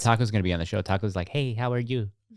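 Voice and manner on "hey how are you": flamboyant, campy Puerto Rican accent. Hosts talk about the voices they give their pets; one voices Taco: Puerto Rican voice.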